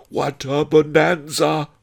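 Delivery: high, loud, howled exclamation. Narrator reads a miser's cry as cutlery is sharpened: howling. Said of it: "howled Miser Shen".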